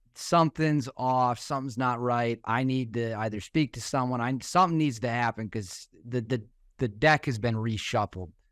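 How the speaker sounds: usual speaking voice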